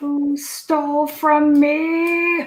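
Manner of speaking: put-on very slow, drawn-out, sloppy slurred drunk goblin voice. Voicing a drunk goblin accusing the players: drunk slurring goblin voice. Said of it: "start to slur their words a little bit".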